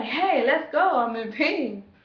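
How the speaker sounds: play-acted urgent, demanding holler, high and drawn-out. Recounting labor pains, the speaker reenacts yelling at her mom still in the house. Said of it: "I'm yelling".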